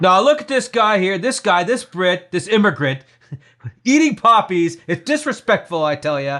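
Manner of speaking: booming pundit-style voice. Mocking how Don Cherry would react to the episode: Don Cherry impression. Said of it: "surprisingly accurate, uh, impersonation of him".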